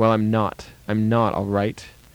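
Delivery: plain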